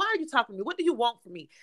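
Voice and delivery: put-on mean, rude tone. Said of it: "you are so mean".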